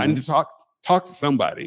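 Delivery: ordinary delivery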